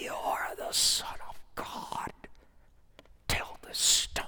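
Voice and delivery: rough, rasping, breathy, gravelly whisper. Retelling the Bible passage where the Devil tempts Jesus, in a gravelly Devil voice. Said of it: "you can just hear that gravelly voice".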